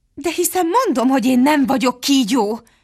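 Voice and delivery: defensive, protesting tone. Alice answers the pigeon's accusation: defensive. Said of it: "védekezett Alice".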